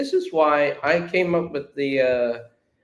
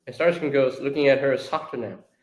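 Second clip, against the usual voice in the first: plain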